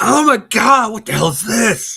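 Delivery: crazed screech, very high-pitched and very loud. Act out the other speaker's liver reacting to drinking water, imitating a liver yelling. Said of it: "it's probably doing that right now".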